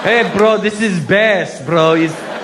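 put-on slow, drawn-out Persian accent.

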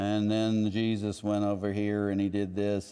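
boring, flat, droning preacher-style monotone.

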